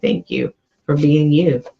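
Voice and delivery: ordinary talk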